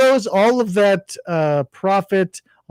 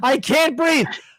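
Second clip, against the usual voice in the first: full-throated, shrill, top-of-the-lungs scream; 8 semitones higher than usual. Retelling how a lady claimed she couldn't breathe: imitating someone screaming. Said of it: "she's screaming at me at the top of her lungs".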